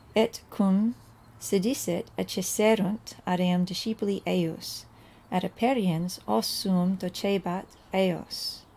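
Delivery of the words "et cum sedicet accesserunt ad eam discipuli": plain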